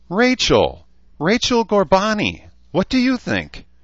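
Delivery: very high, squeaky unicorn voice. Narrator reading a story, a unicorn calling out to Rachel, high squeaky voice. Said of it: "The voice was high and squeaky".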